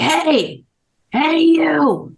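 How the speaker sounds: put-on high booming call, drawn-out "you". Recalling Centrowitz calling out while the speaker was grabbing splits, in Centrowitz's booming voice. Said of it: "I hear this like booming voice".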